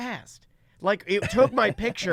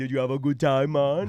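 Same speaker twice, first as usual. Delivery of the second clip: imitated, put-on Jamaican accent; 6 semitones lower than usual. Describing workers at a Halloween house, the speaker imitates a Jamaican accent. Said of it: "all ginormous Jamaican guys".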